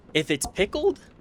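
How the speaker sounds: high voice breaking and cracking mid-phrase. Speaker chatting with listeners mid-sentence, voice cracking. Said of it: "pardon my my voice crack".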